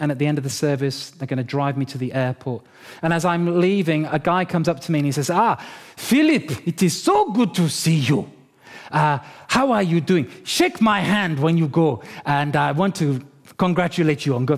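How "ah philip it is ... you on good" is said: put-on Nigerian accent. Retelling what a man at church said to him as he was leaving, Nigerian accent. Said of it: "Nigerian accent".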